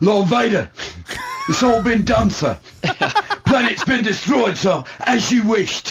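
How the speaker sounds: very high, upper-class English officer voice. Discussing accents in the films, a speaker voices an officer reporting to his lord. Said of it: "Not like English sergeants".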